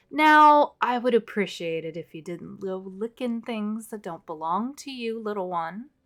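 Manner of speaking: mild-mannered, gentle male voice. Voicing a voice from a mirror scolding a player: soft masculine voice. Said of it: "Kind of a soft, uh, masculine sounding voice".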